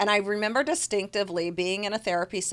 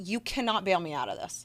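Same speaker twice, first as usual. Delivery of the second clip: put-on pleading, begging voice; 4 dB quieter than usual. Retelling begging parents not to pay for a mistake: retelling own begging. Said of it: "I literally begged my parents".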